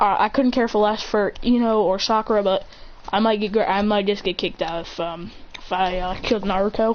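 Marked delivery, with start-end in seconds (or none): none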